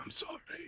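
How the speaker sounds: soft, breathy near-whisper, kept very quiet. Retelling a movie scene, imitating Nicole Kidman's quiet apology. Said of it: "She's trying to be quiet".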